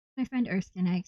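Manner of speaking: ordinary delivery, nothing marked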